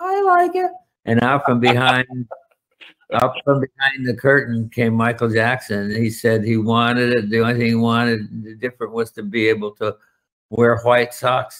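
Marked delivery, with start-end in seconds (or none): 0.0-0.7 very high, little squeaky voice. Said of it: "I heard a little squeaky voice says".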